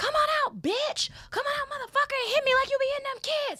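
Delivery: shrill, high, rushed, furious top-of-the-lungs screaming. Standing outside at night calling someone out, retelling screaming at top of lungs. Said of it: "I start screaming at the top of my lungs".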